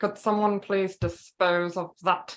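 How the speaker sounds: epic, big movie-villain voice. Doing a favourite movie villain's line: Hans Gruber voice. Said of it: "I love doing his voice".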